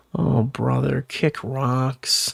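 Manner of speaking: very slow, low, creaky, rough mumble. Imagining how iDubbbz answered a boxing offer: imitating iDubbbz mumbling. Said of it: "him probably mumbling like".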